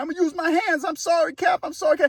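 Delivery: put-on, high-pitched, repeated hollering scream. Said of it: "he kept saying".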